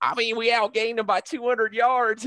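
put-on Southern accent laid on, pitched very high. Retelling a coach's post-game answer: imitating Dan Mullen's Southern accent. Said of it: "in his Southern accent".

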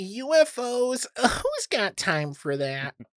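slow, snarky tone. Joking about UFO news coming out during covid: put-on snarky internet voice. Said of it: "a snarky internet voice".

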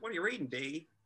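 high-pitched Appalachian mountain twang. Retelling a behind-the-scenes studio story, doing Park Overall's Appalachian twang. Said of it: "is a real appalachian twang".

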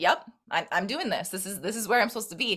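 plain

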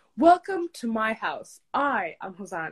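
loud, self-assured, confident showman tone. Retelling a childhood video of themself: imitating own confident childhood voice. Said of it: "talking very confidently".

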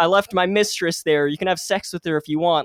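ordinary talk, nothing marked

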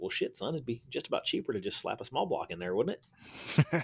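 teasing, half-serious, half-joking tone. Retelling what the speaker's dad said to his son, half jokingly. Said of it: "half jokingly was like".

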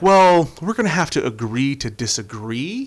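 play-acted feeble, spineless, weak-willed, limp delivery. Mocking a politician's weak-willed remark: mocking a weak-willed comment. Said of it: "In the most weak, in the most weak-willed".

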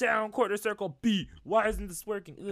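high, loud, frustrated yelling.

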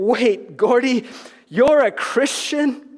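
really shocked, high, drawn-out disbelief. Recounting the group's reaction to a surprising announcement: retelling a really shocked reaction. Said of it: "it was our turn to be really shocked".

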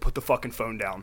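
put-on angry voice. Retelling confronting someone filming at a party: imitating own angry words. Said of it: "but now I'm getting so mad".

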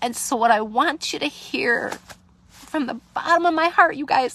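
tearful crying voice. Speaker talking to listeners from the heart, bawling, crying. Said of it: "I'm bawling my eyes out".

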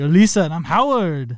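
loud, put-on Austrian accent in English. Joking about American names, the speaker introduces the pair in a put-on Austrian accent. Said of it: "his english accent it it's like in".

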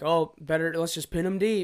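mock, dry, ironic, sarcastic tone. Retelling own past remark in a put-on sarcastic tone. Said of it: "I sarcastically say".

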